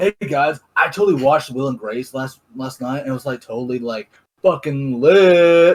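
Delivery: normal talking voice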